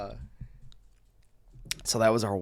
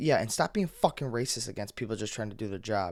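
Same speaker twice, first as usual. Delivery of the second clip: ordinary delivery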